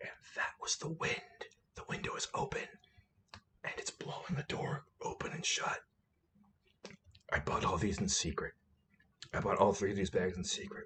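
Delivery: hushed whisper. Eating chips bought in secret from the family, whispering.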